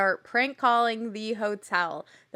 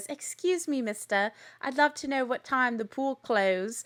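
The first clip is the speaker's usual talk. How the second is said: put-on British accent; 3 semitones higher than usual. One of the girls phones the hotel and speaks in a British accent. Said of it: "in a British accent says".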